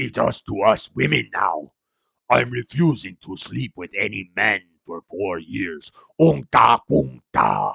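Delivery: slow, drawn-out, rough, creaky voice. Reading a post aloud: Jabba the Hutt voice. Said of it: "read this in Jabba the Hutt's voice".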